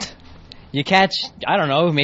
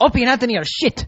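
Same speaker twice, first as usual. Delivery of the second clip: put-on, high-pitched Spanish accent; 9 semitones higher than usual. Guest quotes his dad's opinion of the show's hosts: Spanish accent. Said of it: "he's got like a Spanish accent".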